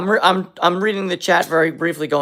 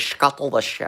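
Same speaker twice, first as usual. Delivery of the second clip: whispered, rusty, breathy put-on voice; 3 semitones lower, 6 dB quieter than usual. Quoting a submarine captain's line in a rusty Sean Connery voice. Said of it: "I'm really rusty with my Sean Connery voice".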